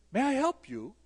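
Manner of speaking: put-on lilting European accent. Retelling a young man offering help: Linus Torvalds lilting European accent. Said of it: "in this lilting European accent".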